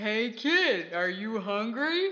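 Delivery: nice, kind, friendly voice. Narrator voicing a character speaking to Chucky, a little mouse, nice voice. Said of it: "said in a nice voice".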